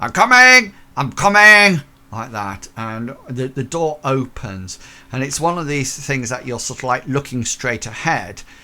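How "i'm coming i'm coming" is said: rough, gruff, high, very loud shout. Storyteller acting out a person answering the door from inside: gruff voice. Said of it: "you hear a rather gruff voice".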